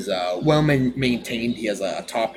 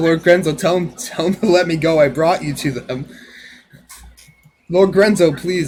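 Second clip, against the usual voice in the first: high, loud, begging, groveling goblin voice; 7 semitones higher, 8 dB louder than usual. Game narrator voicing an injured goblin begging its lord, groveling goblin voice. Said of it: "groveling again to uh Lord Krenzel".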